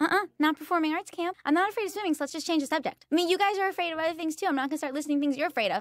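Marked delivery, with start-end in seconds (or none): 1.4-5.8 fast, angry words tumbling out in a rant. Friends at camp bring up how you feel about the water: talking fast and mad. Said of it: "she's talking fast. She's mad".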